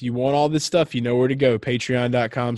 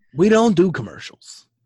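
put-on sports announcer voice, higher and louder; 7 semitones higher, 5 dB louder than usual. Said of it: "the way he says it in his voice".

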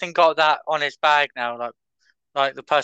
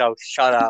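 put-on angry voice, lower pitch; 4 semitones lower than usual. Retelling how Matt told someone to shut up: imitating Matt saying it angrily. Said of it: "he said it such anger".

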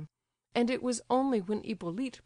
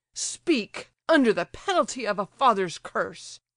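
loud, furious, excited, enraged delivery; 6 dB louder than usual. Reading the general demanding that Gania speak, beside himself with rage. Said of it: "beside himself with rage and excitement".

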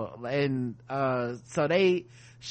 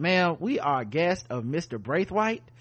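normal talking voice

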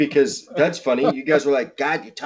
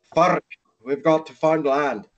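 put-on slight Scottish accent creeping in; 2 semitones higher than usual. Retelling what explorers stuck in the ice said: slightly Scottish accent. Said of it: "that sounded a little bit Scottish there".

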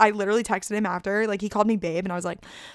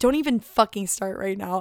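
put-on angry, pissed-off snapping voice. Retelling snapping at a stoked volunteer, imitating herself pissed off.

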